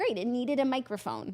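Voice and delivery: ordinary delivery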